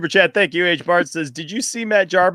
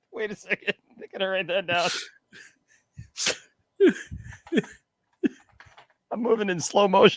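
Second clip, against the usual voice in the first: laughing hard while talking, quieter; 8 dB quieter than usual. Reading a shirt idea from a viewer, laughing hard while talking. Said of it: "I'm laughing so hard".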